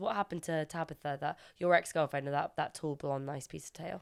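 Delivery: ordinary delivery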